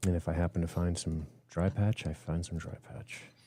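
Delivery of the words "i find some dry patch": whispered aside to oneself, under the breath. Playing a character scouting ahead for a dry patch: said under the breath. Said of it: "I say under my breath".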